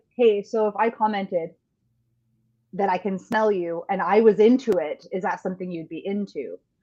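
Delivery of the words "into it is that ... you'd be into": ordinary talk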